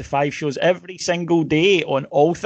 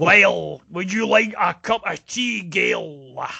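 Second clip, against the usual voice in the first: measured, deliberate pace; 3 semitones higher than usual. Joking about the way a public figure talks: Tommy Sheridan impression. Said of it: "the way he talks".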